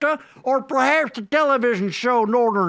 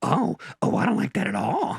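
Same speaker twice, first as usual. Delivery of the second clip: breathy, half-whispered voice; 4 dB quieter than usual. Asking another speaker to guess the voice: Marge Simpson voice. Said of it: "it's Marge Simpson".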